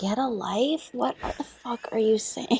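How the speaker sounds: soft, whispered, embarrassed, self-mocking muttering.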